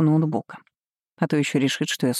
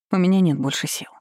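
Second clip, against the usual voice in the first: ordinary delivery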